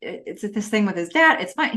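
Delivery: ordinary talk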